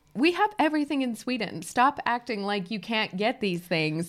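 ordinary delivery

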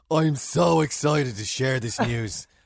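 loud, put-on, heavy posh South Dublin accent. Reading out Vogue Williams' tweet, in a posh South Dublin accent impression. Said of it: "I'm trying to do the posher South Dublin accent".

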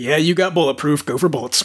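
put-on gruff voice. Telling a story, the speaker voices the dad coming to answer, gruff Bulletproof voice. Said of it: "the telltale gruff sound of".

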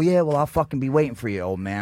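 ordinary talk, nothing marked

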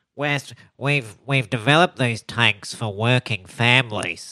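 put-on Australian accent. Musing about Australian Prime Ministers, the speaker puts on an Australian politician voice. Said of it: "Australian politician voice".

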